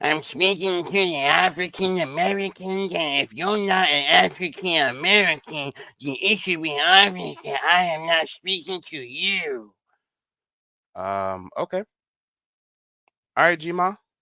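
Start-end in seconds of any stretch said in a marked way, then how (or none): 0.0-9.7 churchy smoker's voice with the word you dragged out. Mimicking a video maker's words while reacting to her content: smoker church voice. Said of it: "do that smoker church voice".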